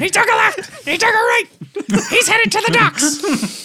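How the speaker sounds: high, loud, running sports commentator play-by-play. Players following a runner, commentating like a baseball game: Seamus voice, an octave up. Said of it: "The Seamus up an octave though".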